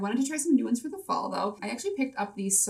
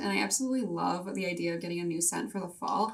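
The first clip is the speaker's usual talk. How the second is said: usual speaking voice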